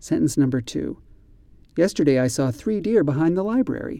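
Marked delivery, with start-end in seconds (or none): 1.8-4.0 read at natural, everyday conversational pace. Reading a practice sentence aloud for listeners: fast. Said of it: "read the sentences at this quick speed".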